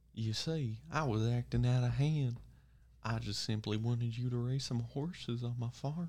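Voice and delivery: put-on cowboy character voice, creepy. Improvising as a cowboy asking someone to raise horses, in a creepy cowboy voice. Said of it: "You went from cowboy to pedophile".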